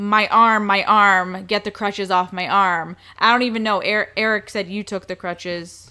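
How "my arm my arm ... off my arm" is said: ordinary talk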